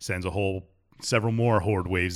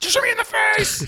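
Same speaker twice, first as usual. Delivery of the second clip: unhinged, shrill, very high, loud psycho screaming; 6 dB louder than usual. Quoting a game character who begs to be shot: imitating a screaming psycho. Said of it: "a psycho screaming for you to shoot you".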